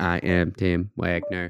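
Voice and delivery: slow, robotic, machine-like voice. Host mimics his co-host's self-introduction back to him, in a robotic Tim Wagner imitation. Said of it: "You kind of like".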